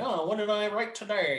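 high-pitched, flustered, lost mock panic.

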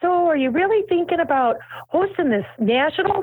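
put-on high-pitched Wisconsin accent. Retelling what Bonnie said on a trip to Tiffany's: imitating Bonnie, Wisconsin accent. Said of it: "a spot on Wisconsin yeah".

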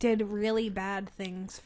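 said slowly and deliberately. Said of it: "Talk, say it slow".

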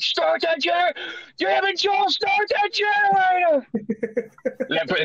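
acted ringside heckling yell, pitched way up. Retelling heckling an actor playing Joel at a haunted house, retelling yelling like a heckler. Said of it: "so I got to yell at him like it was at wrestling and heckling him".

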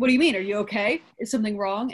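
ordinary delivery

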